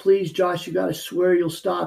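imitated tearful, pleading crying voice. Retelling a stepmom begging him to stop getting high: imitating stepmom's tearful plea. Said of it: "And we're both crying".

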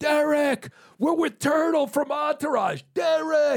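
very high, stretched-out, drawn-out screaming. Retelling guys at the game screaming at a player: imitating guys screaming. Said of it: "these guys start screaming".

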